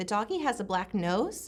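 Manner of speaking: question-like upward rise on the word nose. Showing the inflection to avoid in a child's statement: question-like rising pitch on nose. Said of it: "do you hear my inflection? It's going up".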